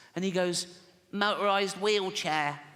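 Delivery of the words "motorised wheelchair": put-on pitched-up voice like a six-year-old. Telling a joke where a father asks little Timmy about Christmas, in Timmy's voice. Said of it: "I promised Jane I wouldn't do the voice".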